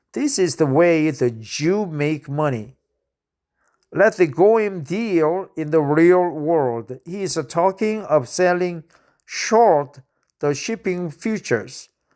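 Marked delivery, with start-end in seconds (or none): none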